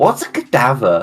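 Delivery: put-on classic valley girl way of talking. Retelling what a girl asked him about an artist's sculpture: valley girl voice. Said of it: "the way you portray this girl".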